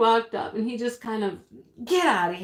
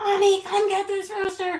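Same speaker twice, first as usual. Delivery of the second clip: play-acted, very high-pitched, shrill yell; 9 semitones higher than usual. Knocked down by a rooster, the speaker retells calling for their husband, retelling a yell. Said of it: "I'm just yelling".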